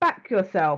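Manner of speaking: put-on very strong, thick London accent. Retelling what they once said about people backing themselves, in a strong london accent. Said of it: "I said it in my very London accent".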